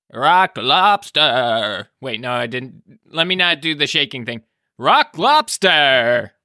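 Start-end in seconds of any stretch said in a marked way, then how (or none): 4.8-6.3 odd put-on alien character voice. Asked to say a phrase in their alien voice; alien voice. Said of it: "Can you say Rock Lobster in your alien voice?".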